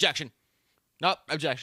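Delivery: put-on eager voice. Imitating a young lawyer objecting in court: imitating a spunky, alert lawyer. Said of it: "She's very spunky... You can hear it in her voice".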